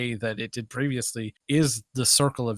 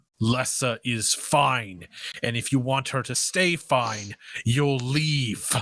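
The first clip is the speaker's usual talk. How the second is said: loud voice booming out. Narrating a game scene, voicing a figure who tells the player to leave, booming voice. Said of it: "It kind of booms out over the room".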